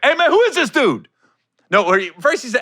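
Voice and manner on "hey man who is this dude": high-pitched, loud, furious outburst. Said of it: "went left on him quick".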